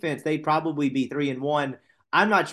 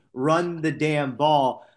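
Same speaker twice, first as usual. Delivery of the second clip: normal talking voice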